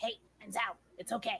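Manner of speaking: soft, faintly demonic voice close in the ear. Speaker voices a winged creature on the listener's shoulder, slightly demonic voice. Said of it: "hearing this slightly demonic voice in your ear".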